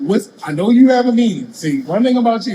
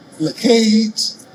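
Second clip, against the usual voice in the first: Baltimore accent, higher; 3 semitones higher than usual. Showing how someone from Baltimore would pronounce a name, in a Baltimore accent. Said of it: "If I was from Baltimore, I would say".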